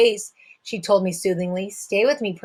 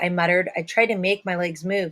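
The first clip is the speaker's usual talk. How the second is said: ordinary delivery, nothing marked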